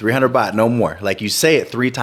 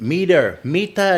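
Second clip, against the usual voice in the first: pitched-up put-on Thai accent on the repeated word; 8 semitones higher than usual. Retelling what an Australian video maker said in a taxi: mock Thai accent. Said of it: "saying it with the Thai, with the Thai um, accent".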